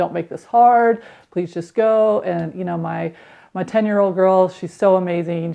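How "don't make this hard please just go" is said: pleading, imploring voice. A parent retells getting the girls to bed, retelling own pleading voice. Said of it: "It was just pleading with them".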